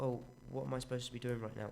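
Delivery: ordinary delivery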